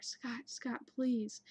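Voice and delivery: mock hysterical crying. Retelling calling out for Scott while terrified, reenacting hysterical crying. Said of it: "like hysterically crying".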